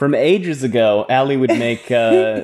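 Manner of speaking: ordinary delivery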